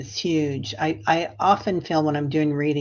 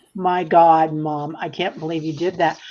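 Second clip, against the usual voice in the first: mock-mortified, cringing embarrassment. Mother retells her daughter's reaction after she yelled in the parking lot, imitating cringing embarrassment. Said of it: "my daughter is cringing".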